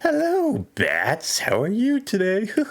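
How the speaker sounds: very high, swooping cartoon villain voice. Trying a Mark Hamill Joker impression: Mark Hamill Joker voice. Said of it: "let's try Mark Hamill's Joker".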